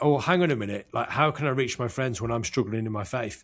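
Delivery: ordinary delivery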